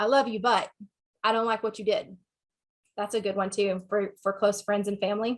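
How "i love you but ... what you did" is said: usual speaking voice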